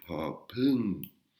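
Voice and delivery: popun with rising pitch and breathy, aspirated P. Contrasting popla's normal intonation with popun: rising pitch on popun, breathy P. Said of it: "une intonation qui monte et avec un H dans le P avec de l'air qui sort".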